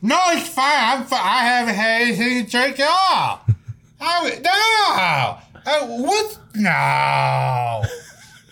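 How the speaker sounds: put-on very high, slow, drawn-out tipsy drunken voice. Describing drunk people who insist they are sober: imitating a drunk person. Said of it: "When they're leaning thirty-five degrees to the side going".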